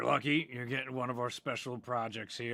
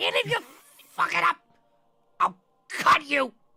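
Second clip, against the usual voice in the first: shrill gnome voice, very high and very loud; 12 dB louder than usual. Retelling what the gnome said next, in a gnome voice. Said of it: "then the gnome goes like".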